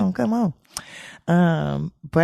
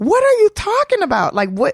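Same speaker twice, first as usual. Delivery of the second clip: incredulous, blurted out high. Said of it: "And I'm like".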